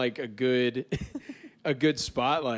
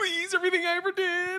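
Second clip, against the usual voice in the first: mock, very high, begging pleading voice. Acting out own last moments, bargaining hard: mock pleading. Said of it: "I'm going out bargaining hard".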